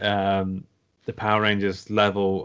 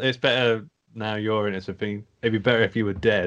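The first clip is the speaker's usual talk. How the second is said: usual speaking voice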